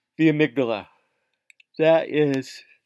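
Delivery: very loud, high words stretched by a yawn. Explaining a part of the brain, talking through a yawn. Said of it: "sorry, yawning".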